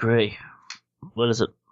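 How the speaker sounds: drowsy, sleepy, half-awake voice. Narrating a game scene, Eve picks up a ringing phone upstairs, answering sleepily.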